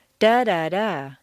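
syllables stressed by pitch, rising then falling.

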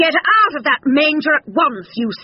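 high, furious, angry shout. A narrator reads Farmer John storming into the barn at Dog: shouting angrily. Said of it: "he shouted angrily".

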